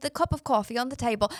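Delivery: put-on English accent. Trying out a sample sentence in an accent: put-on English accent. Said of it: "I'm reading in an English accent and it sounds kind of like this".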